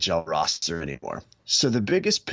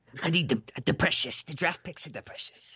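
put-on high creature voice with Brooklyn accent; 8 semitones higher than usual. Speaker imitates a general manager hoarding draft picks, in a Gollum voice. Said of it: "My Gollum sounded like he was from Brooklyn".

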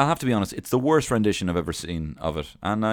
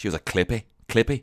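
clumsy, bad put-on Glaswegian accent. Quoting a man about the woman he fell for, bad Glaswegian accent. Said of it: "in his lovely Glaswegian accent".

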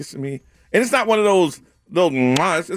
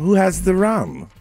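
put-on drunk pirate voice. Trying out the character's voice with a co-speaker, asking about rum; drunk Jack Sparrow voice. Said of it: "something like that".

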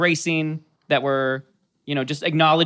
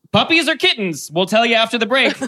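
loud, pitched-up TV news anchor teaser delivery; 7 semitones higher, 5 dB louder than usual. Explaining why something sounded like a news announcer, then mimicking one: news announcer voice. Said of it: "it sounded like a news announcer".

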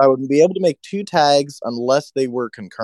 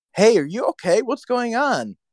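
very high, shrill, loud called-out yell; 10 semitones higher than usual. Retelling a game where a teammate called out: imitating Brandon yelling. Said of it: "Brandon yells to me".

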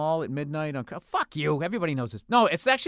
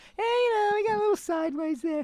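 very high, put-on falsetto. Imitating the other speaker's words: imitating someone in falsetto. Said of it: "goes into falsetto".

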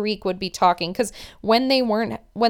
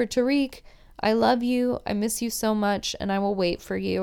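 put-on weepy, tearful voice through sobs; 3 dB quieter than usual. Retelling a message to a fiance after a producer's question: imitating someone crying.

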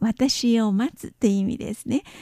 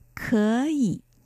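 可 said with rising second tone. Explaining the tone change in 可以: rising tone on first syllable 可. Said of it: "前の賛成を2 声と発音しますから、可以と発音します".

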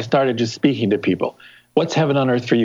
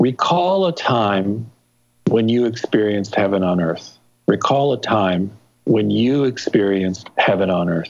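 very slow pacing with time stretched out; 3 semitones lower than usual. Guiding listeners through an exercise so they can follow along; very slow delivery. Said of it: "Let me do this really slowly".

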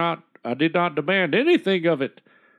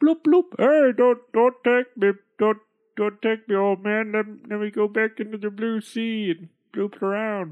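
high, pleading, begging goldfish voice; 5 semitones higher than usual. Narrating a fairy tale, a caught goldfish speaks to the old man in a human voice. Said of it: "It was not an ordinary fish, but a goldfish. But a goldfish. A simple pet store. The goldfish implored him in a human voice".

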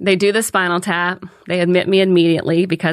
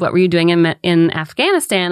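ordinary delivery

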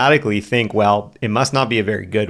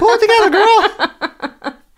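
very high, loud alter-ego voice, two octaves up, belted; 6 dB louder than usual. Speaker voices the alter ego Big Al, voice raised two octaves. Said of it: "I raise my voice two octaves".

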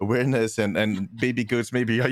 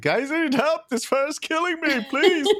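high-pitched pleading call. Support player retelling calling to the team for help, retelling own yelling for help. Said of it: "I'm yelling at the rest of my team".

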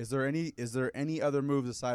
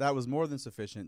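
plain

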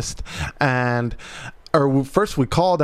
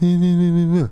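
small feeble voice. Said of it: "Don't say".

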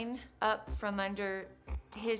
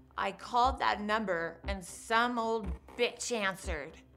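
normal talking voice

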